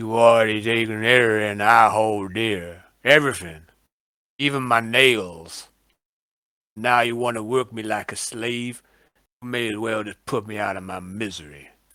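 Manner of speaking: scornful, sneering tone. Voicing a character answering a request for a fellowship test, sneering. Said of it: "He looks at you and he sneers".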